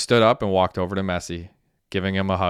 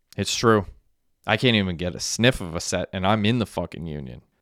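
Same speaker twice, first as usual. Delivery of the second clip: ordinary delivery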